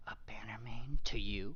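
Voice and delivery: hushed, whispered speech. A character looks left and right before answering a question, whispering. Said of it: "looks left and right and then whispers".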